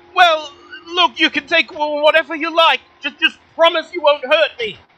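halting, stuttering voice. Game master voicing the hidden person's reply to the players: stammering voice. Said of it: "The voice stammers again".

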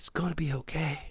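hushed voice. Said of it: "as close as a whisper, saying".

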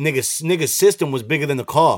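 normal talking voice

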